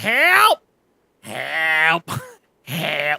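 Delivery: drawn-out, swooping, yowling cat voice. Describing their cat stuck up in the closet rafters, in Luna's stuck-cat voice. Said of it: "and that's the cat voice".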